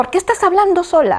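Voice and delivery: very high, irritated, annoyed scolding tone. Retelling what the father said: imitating an annoyed father.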